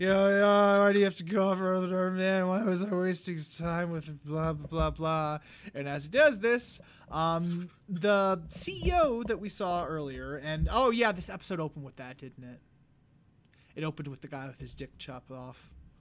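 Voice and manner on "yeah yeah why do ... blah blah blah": mock drunken slurring speech. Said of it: "embarrassing himself all drunk".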